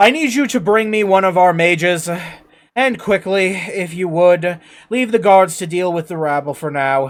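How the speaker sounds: booming king voice, very loud, commanding shout. Voicing a king who calls through the door for a mage: king shouting to his assistant. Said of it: "and he shouts".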